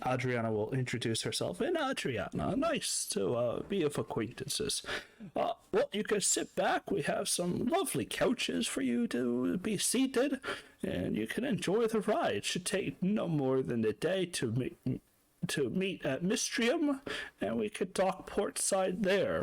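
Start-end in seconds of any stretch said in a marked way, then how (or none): 1.6-19.4 put-on elderly gentleman's voice, pitched up. Game master as a ship captain welcoming passengers aboard, in an old man voice. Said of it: "this elderly gentleman named [name] in the back. / this elderly gentleman named [name] in the back. / this elderly gentleman named [name] in the back. / this is just like one old man's voice, / You've".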